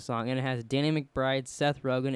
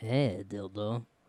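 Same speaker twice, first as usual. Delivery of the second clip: put-on French accent, pitched lower; 4 semitones lower, 5 dB quieter than usual. Mimicking the other speaker's accented nickname back at him, Pepe Le Pew French accent. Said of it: "What are you, Pepe Le Pew?".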